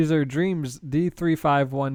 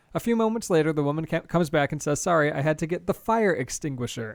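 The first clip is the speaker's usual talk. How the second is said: plain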